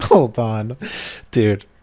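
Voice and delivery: giggly speech breaking into laughter through the words. Reacting to a cartoon title, laughing while talking. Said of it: "I'm sorry that I'm laughing into the mic".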